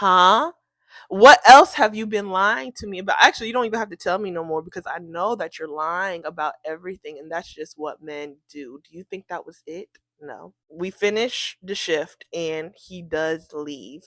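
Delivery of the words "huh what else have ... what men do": plain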